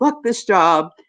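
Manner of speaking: restrained mild yell, scream only hinted, held in. Retelling a worker walking off the call floor: imitating someone screaming.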